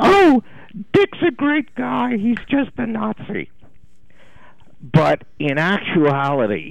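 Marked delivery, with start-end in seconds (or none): 0.0-3.5 joking, very high falsetto. Quoting a student's joke about her professor, in Meg Warzynski's joking falsetto voice. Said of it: "said in a falsetto voice one day as a joke".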